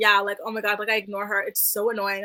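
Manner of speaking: ordinary talk, nothing marked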